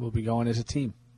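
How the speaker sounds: soft, downbeat, deflated, dejected delivery. Echoing the group's plan to go together as a team, dejected. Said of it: "Why are you sounding dejected about it?".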